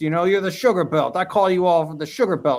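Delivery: put-on New York accent. Retelling what a mead-world friend used to say: Bob Slanzy's New York accent. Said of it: "in his New York accent".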